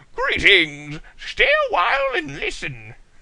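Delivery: put-on loud, booming old sage voice, pitched high. Reading a story aloud, the speaker breaks off into a female Deckard Cain voice. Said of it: "I sound like Deckard Cain".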